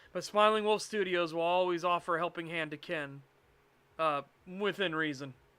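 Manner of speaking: ordinary delivery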